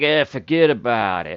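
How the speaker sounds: scornful, contemptuous, dismissive, slow brush-off. Showing the same phrase said when you think the guy's an idiot: mock dismissive tone. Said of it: "you think the guy's an idiot".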